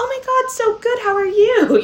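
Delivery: very high, falsely cheery, put-on cheerful voice. Retelling meeting someone while in a bad mood: imitating own fake cheerful greeting. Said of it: "kind of in a bad mood".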